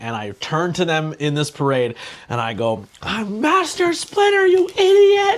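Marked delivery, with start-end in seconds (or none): 3.0-5.4 put-on shrill, very loud, furious high shout, rising. Retelling turning to people at a parade who got the costume wrong, retelling an angry shout. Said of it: "I got so angry".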